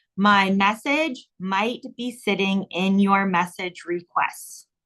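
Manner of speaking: very slow, drawn-out, deliberate, word-by-word dictation. Giving listeners his reply wording to write down, saying it really slow. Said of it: "I'll say it really slow".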